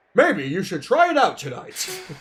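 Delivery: dramatic, loud, swooping put-on narrator voice. Reading a game's narrator line aloud in a put-on narrator voice. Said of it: "I'm just gonna do it in that voice".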